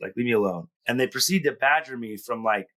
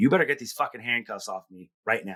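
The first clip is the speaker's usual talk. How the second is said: mock-angry, forceful demanding tone. Retelling what he told the person who handcuffed him, an angry demand. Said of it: "I was like".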